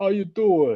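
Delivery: friendly, tossed-off, slightly high-pitched American voice. Describing how a character talks in Creed: Rocky impression. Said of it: "He's just like".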